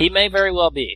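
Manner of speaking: commanding captain delivery. Praising a TV hero as most charismatic, in Kirk voice. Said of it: "You even said that like Kirk".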